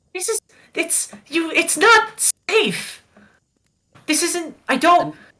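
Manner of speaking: very high shouting in broken-off bursts. A character urging someone to calm down, yelling. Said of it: "I'm sorry. I'm yelling".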